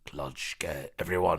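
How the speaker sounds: deep, low big dog voice. Narrating the great dog Clutch's reply, in Clutch's deep dog voice. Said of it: "the great dog said in his deep voice".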